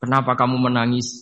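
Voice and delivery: ordinary talk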